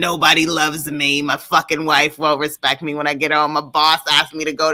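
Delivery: mock angry 1950s everyman voice, ranting. Acting out the shtick of an angry nineteen fifties guy: imitating an angry fifties everyman.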